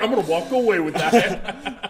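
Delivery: slow, drawled mock voice through laughter. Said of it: "He's like".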